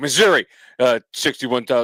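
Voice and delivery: broadcast newsreader delivery. Mocking how the other speaker greeted them on arrival: imitating a news-anchor voice. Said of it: "you're like".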